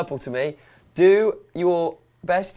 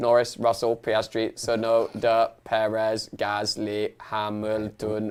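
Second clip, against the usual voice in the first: robotic voice, pitched lower; 5 semitones lower than usual. Giving a rundown of the race grid after the wheel says: robot voice. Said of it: "just speaking as a robot".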